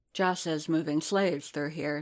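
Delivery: plain reading voice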